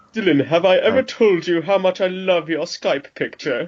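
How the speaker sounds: very bad, fake, put-on British accent. Asking another speaker about their skype picture: worst british accent. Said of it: "that was the worst British accent I've ever heard".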